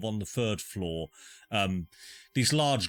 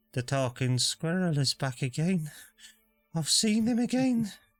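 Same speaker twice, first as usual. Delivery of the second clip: faint, very high voice; 10 semitones higher than usual. As you pass each person, you hear a faint voice. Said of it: "you just hear this faint voice just go".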